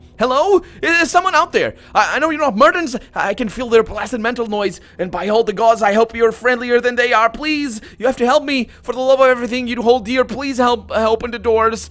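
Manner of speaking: panicked man calling out, high pitched. As game master, voice a man calling through a heavy door for help: panic-filled male voice. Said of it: "a panic-filled male voice calls out to you".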